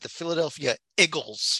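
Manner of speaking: true South Philly accent. Host brings up the day's picture of their favorite team: true South Philly accent. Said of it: "spoken in true South Philly accent".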